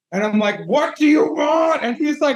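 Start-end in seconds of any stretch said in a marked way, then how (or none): 0.6-1.8 put-on, full-on, high, drawn-out scream. Retelling screaming at a young kid: imitating own scream. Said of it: "literally screaming at each other".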